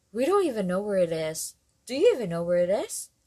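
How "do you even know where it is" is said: insistent, pressing, demanding tone. Makisig Adi questions the group, demanding. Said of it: "Demanded Makisig Adi".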